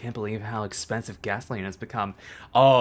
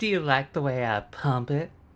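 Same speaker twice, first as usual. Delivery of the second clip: put-on Southern accent; 4 semitones higher than usual. Playing a character for chat, in a Southern Belle accent. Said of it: "making me pull out the Southern Belle accent".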